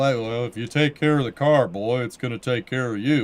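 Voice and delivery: homespun, folksy tone. Giving car advice, saying it in a Hank Hill voice. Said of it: "a Hank Hill".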